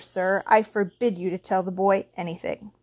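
ordinary delivery

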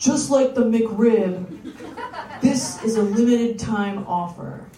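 put-on attempt at a man's voice. Reading out the texts a man sent a date: doing a man's voice. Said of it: "I'm going to do my best man voice".

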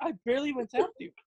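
offhand, dismissive, brushing-off tone. Acting out a friend brushing off a light hit: imitating a friend dismissively. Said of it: "and she's like".

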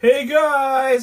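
put-on loud, high hyped shout, guys drawn out. Retelling office circle greetings at a job: imitating someone shouting. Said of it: "somebody would shout".

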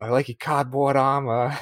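put-on over-the-top, very thick Boston accent. Quoting a film character's lines: imitating Jack Reynor's Boston accent. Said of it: "everything he says was like".

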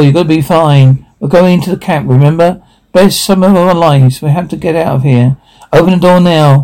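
plain reading voice

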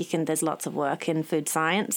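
ordinary delivery

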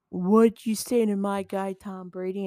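angry, confrontational, challenging, squaring-up tone. Retelling a brawl in a football game: imitating Mike Evans confronting Brady. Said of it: "Mike Evans is like".

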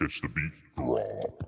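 booming deep voice. Performing a catchphrase after being asked: loud deep voice. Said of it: "loud voice, deep voice".

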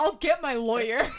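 high, loud, entitled sixth-grader voice. Imagining a sixth grader threatening a teacher: imitating a sixth grader. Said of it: "Imagine a sixth grader".

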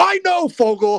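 very high, loud, mocking put-on character voice.

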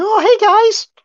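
put-on very high, loud, popped-out nerdy teen voice. Imitating an actor's American accent as a nerdy teen: Tom Holland nerdy teen voice. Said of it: "He just sort of does the nerdy teen".

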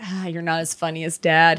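put-on slow, half-laughing delivery. Imitating a little boy in a movie, imitating half laughing. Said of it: "half laughing".

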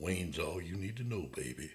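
low, soft, smooth-talker voice. Telling how Wayne answers when asked his last name, in Wayne's voice. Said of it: "this is Wayne's voice".

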